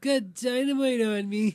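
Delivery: loud, high, drawn-out, slow belting. Quoting Tommy's dynamite line from the movie: Chris Farley impression. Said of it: "That's my impression of, uh, Chris Farley".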